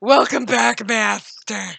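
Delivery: deep, seductive voice. Repeating a greeting, this time trying out a different voice: deep sexy voice. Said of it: "Maybe I say it in my deep, sexy voice".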